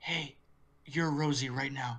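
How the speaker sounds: whispering voice. Retelling how a man taps a dazed woman with his foot, whispering. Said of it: "and he whispers".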